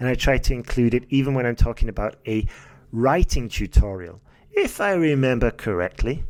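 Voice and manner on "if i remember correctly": exaggerated, dramatized rise and fall on "remember". Demonstrating a phrase from a podcast tutorial with dramatized intonation. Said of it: "I'm dramatizing my intonation there".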